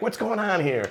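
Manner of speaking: shrill, very high-pitched shout. Retelling a scene where one character yells at another: imitating someone yelling. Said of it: "he yells at him".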